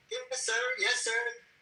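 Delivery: polished, polite, professional code-switched voice.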